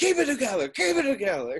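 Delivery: shrill, very high yell, pitch jumping all over. Describing a favorite movie scene, acting it out, imitating Tom Sizemore yelling. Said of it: "And he's yelling".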